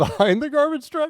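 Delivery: words breaking up into laughter, swooping pitch. Naming one of the funniest deaths, laughing while talking.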